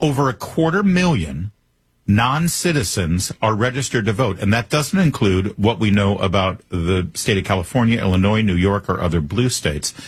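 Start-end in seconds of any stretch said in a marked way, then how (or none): 0.0-4.4 slow, deliberate delivery.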